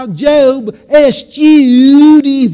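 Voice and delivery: put-on twangy Southern accent. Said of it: "that good old Southern twang".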